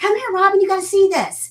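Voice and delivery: high, loud holler projected far.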